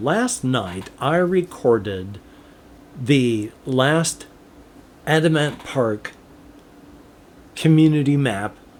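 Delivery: sluggish, slow, halting, stop-start delivery. Updating listeners on a recording from last night, the speaker is talking slowly. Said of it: "I'm sorry I'm talking so slowly".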